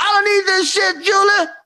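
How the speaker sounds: furious, high, angry shriek. Recounting a night in texas, quoting what he shouted at her: retelling someone screaming. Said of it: "the whole time he's screaming".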